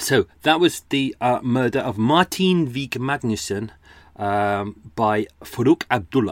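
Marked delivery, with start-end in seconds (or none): 5.0-6.3 Middle Eastern Arabic accent on a name. Naming a murderer after a recap, Arabic accent on the name. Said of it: "enjoy doing the, uh, Middle Eastern, uh, Arabic accents".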